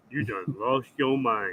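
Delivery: very deep, low, dropped-down put-on voice. Taking a turn repeating the line in someone else's style, imitating a deep voice. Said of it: "you getting deep, like real deep".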